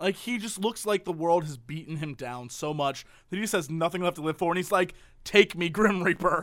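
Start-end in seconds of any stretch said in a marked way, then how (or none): 5.2-6.4 mock old man voice, despondent and despairing. Describing an old man seen in a store aisle, imitating a depressed old man. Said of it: "he looks so depressed".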